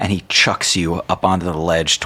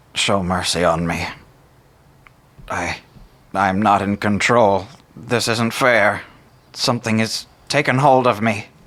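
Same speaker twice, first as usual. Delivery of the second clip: desperate, begging, pleading tone; 2 semitones higher than usual. Voicing a cursed judge on his knees, pleading judge character. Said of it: "he is going to say".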